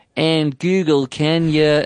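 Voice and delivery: terrible fake American accent. Speaker showing how they must talk to a voice assistant: really terrible american accent. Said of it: "like in a really terrible American accent".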